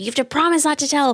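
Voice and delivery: put-on high screaming. Retelling a movie scene where a boy makes a demand: imitating someone screaming. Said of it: "screaming at him".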